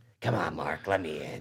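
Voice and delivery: very low, very hushed, creepy guttural monster growl. Quoting a monster's window scene from a show: guttural creepy monster voice. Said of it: "a creepy monster voice when it's like, guttural".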